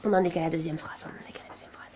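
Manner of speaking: soft, unvoiced, calming whisper. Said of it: "voilà, bon, je me calme".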